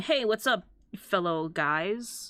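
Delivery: put-on casual manner, acting normal. Joking about being a demon lord in human disguise, greeting people: demon lord posing as a normal guy. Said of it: "I'm in my human disguise going".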